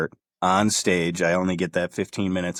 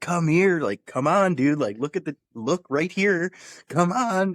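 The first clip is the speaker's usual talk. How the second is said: very high-pitched, urgent shouting; 11 semitones higher than usual. Retelling calling a fighter over from the barrier: retelling own yelling. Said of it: "I'm yelling at Chris".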